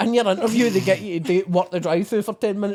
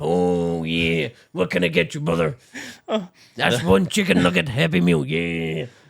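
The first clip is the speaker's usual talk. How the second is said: gruff, exaggerated voice with wide pitch swoops; 2 semitones lower than usual. On the McDonald's headset doing accents: Macho Man Randy Savage voice. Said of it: "doing accents. I done man's Macho Man Randy Savage".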